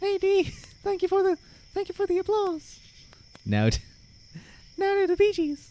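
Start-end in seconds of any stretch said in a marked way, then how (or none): 0.0-2.8 cartoon head voice, much higher, slower. Streamer explaining head voice to chat, showing it off: Mickey Mouse voice. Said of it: "start to talk like Mickey Mouse".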